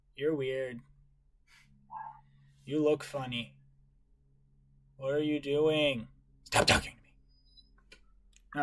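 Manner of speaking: drawn out, dazed and vacant. Voicing a young child asked the way by a stranger: dazed young child voice. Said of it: "as though she's almost dazed off".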